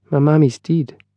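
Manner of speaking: very small, slight voice. An unseen voice from under their feet answers the two men, very small voice. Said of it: "said a very small voice".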